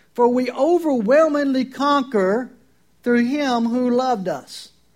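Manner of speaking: slow, emphatic, overwhelmingly punched loud, slow finish.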